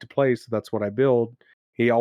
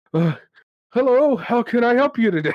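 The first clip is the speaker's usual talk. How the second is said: really out of breath, very high-pitched panting; 12 semitones higher, 4 dB louder than usual. Retelling voicing the same guy barreling out at the blacksmith: Bomar, acting really out of breath. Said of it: "He's really out of breath".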